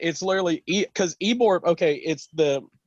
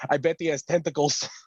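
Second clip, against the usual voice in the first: put-on, amped-up, excited voice. Retelling a video where someone is amped up: imitating Svetka, amped up. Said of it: "just amped up, just crazy as can be".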